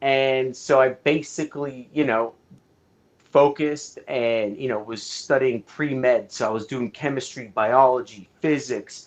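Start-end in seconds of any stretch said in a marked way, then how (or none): none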